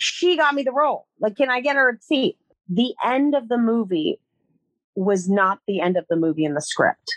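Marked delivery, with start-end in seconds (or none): 0.0-2.4 high, raised-voice shouting. Recalling trying to get a ticket for the assistant, retelling yelling at the producer. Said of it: "I'm like yelling at the producer".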